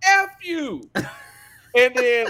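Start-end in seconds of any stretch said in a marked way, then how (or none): 0.0-0.8 mock shrill, very high, loud scream. Recounting a balcony scene from a movie, imitating a guy screaming out. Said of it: "the guy screams out".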